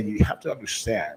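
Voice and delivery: low, hushed, grave and earnest, with inflections. Speaker shows how to convey something really serious: low, serious voice. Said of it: "I'm going to drop my voice".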